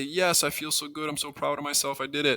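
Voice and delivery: high, sarcastically proud, a little mean. Showing a mistaken student's premature pride in a finished factoring: sarcastic, mock-proud. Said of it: "I'm just being sarcastic and being mean".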